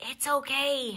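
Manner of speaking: whispering. Murray answers Lily after she squeaks at an owl's hoot, whispered. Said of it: "whispered Murray".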